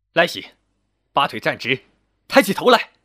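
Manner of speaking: stern, sudden, loud, sharp bark with rising pitch. A mother suddenly addresses her son after he confesses gambling losses: sharply barked order. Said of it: "魏三娘突然厉声喝道".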